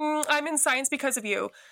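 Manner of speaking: high, sudden blurt, all at once. Retelling her sister's words in an autograph line, retelling a blurted remark. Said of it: "my sister just kind of blurted out".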